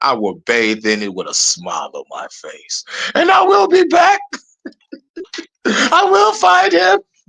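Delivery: high, swooping, villainous delivery. Acting out being cast into the lake of fire: General Zod voice. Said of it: "this bitch sound like General Zod".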